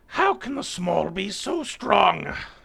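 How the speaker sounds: very high, rough, enraged squealing, wailing bird cry. Narrating a fight, the speaker voices an enraged character: squawking and squealing. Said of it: "squawks and squeals and wails at everybody".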